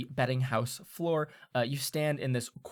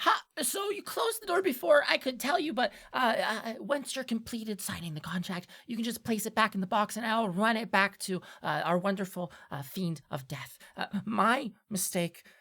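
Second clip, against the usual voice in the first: high, put-on voice of a small gnome; 8 semitones higher than usual. Describing a scene to a listener, the speaker voices a gnome at the door: little gnome voice. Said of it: "You see a little gnome standing there, and he goes".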